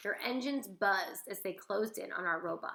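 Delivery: ordinary delivery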